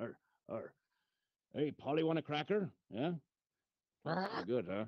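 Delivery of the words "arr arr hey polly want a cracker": put-on pirate voice. Doing a ventriloquist act with a bird on the shoulder: pirate voice. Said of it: "There's a pirate".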